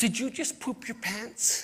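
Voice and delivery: put-on worried little boy voice. Retelling a little boy asking a girl a question: imitating a concerned boy. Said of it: "with great concern in his heart".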